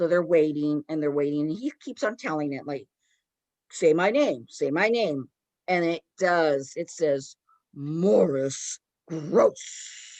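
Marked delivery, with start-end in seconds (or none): 7.7-10.2 hoarse, eerie, raspy, scary voice. Speaker retells the thing saying the name it was told to say: raspy scary voice. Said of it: "in this raspy voice".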